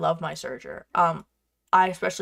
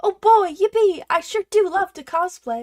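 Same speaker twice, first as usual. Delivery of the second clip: very high, loud, fake teary happy crying; 13 semitones higher, 6 dB louder than usual. Joking about loving cosplay while struggling: mock tearful cheer. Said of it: "I say with tears in my eyes".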